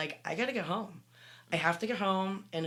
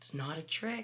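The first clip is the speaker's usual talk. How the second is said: hushed half-whisper, under the breath; 5 dB quieter than usual. Retelling what was said to a child on the lap: half-whispering. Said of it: "And I whispered to him again".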